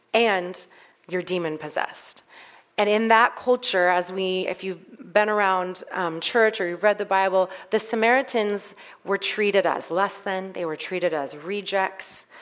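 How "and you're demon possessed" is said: ordinary delivery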